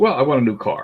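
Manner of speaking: plain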